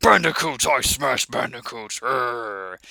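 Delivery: put-on grunting brute voice. Showing the grunts and growls a character had: imitating Tiny's grunting growl. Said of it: "back to the grunt and growls that Tiny had".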